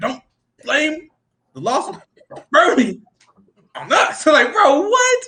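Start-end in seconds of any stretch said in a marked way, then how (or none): 0.0-4.2 put-on drunk voice, slow, halting, broken phrasing. Replaying a line from a video that sounds drunk: imitating a drunk-sounding delivery. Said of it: "he literally sounds like a drunk character".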